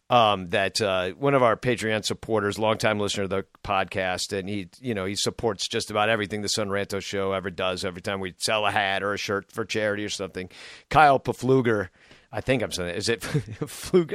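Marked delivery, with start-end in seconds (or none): 12.3-14.1 talking through helpless laughter and giggling. Trying to pronounce a supporter's last name, laughing while talking. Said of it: "I can't say it without laughing".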